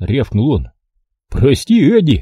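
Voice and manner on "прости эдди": dopey, silly, foolish sorry, pitched up. Reading a private apologizing to the corporal who barked at them: grinning foolishly. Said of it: "глупо ухмыляясь".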